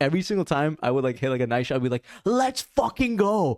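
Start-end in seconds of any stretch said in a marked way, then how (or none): 2.2-3.6 mock, very high, top-of-the-lungs all-out yell. Retelling celebrating good tennis shots: imitating own past yelling. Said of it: "yell it at the top of my lungs".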